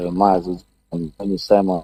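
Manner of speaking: very soft, low murmur.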